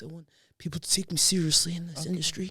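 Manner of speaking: forced, put-on, overly masculine voice. Retelling how Elizabeth Holmes wanted to be taken seriously: very manly voice. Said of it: "Put on a very manly voice".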